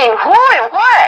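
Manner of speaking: high, frantic, freaking-out panicked voice. Retelling asking a son what he witnessed: imitating own panicked question. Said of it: "freaking out".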